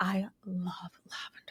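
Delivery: very creepy, eerie, hushed voice. Mimicking how she said it in the kitchen, in a very creepy voice. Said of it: "she says it in this very creepy voice".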